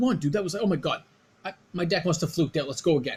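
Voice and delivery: mock sore-loser voice, really mad and upset. Retelling how a losing opponent demanded a rematch: imitating Chad being really mad. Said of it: "he's, like, really mad".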